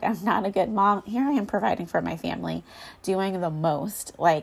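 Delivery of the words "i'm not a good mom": words broken up by sobs, tearful. Retelling own words said while sobbing over mom guilt: retelling own sobbing words.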